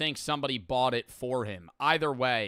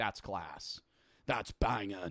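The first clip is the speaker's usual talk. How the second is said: mock middle-aged man voice, lower and quieter; 5 semitones lower, 6 dB quieter than usual. Imitating a fifty-year-old man reacting to a comedy joke: imitating a fifty-year-old man. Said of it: "if there was a fifty-year-old man watching, they'd be like".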